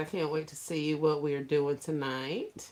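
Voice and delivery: plain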